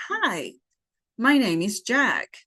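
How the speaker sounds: lively tune, "hi" lifted high, then falling on "jack".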